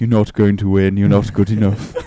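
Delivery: loud, mocking, taunting tone.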